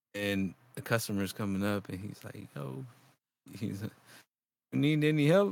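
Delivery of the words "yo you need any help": put-on Mexican accent. Retelling a coworker offering help to a customer, imitating a mexican accent. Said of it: "and like with the accent and shit".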